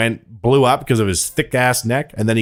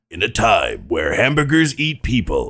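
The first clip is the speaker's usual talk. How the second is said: slow, swooping movie trailer announcer voice. Joining a joke about movie trailer voices: movie trailer narrator voice. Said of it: "one guy who does all the movie trailers".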